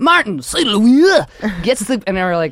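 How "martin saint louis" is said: full fake French announcer voice, put-on accent, pitched up. Imitating the announcer calling a player with the puck: fake French accent. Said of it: "the announcer goes into full fake French".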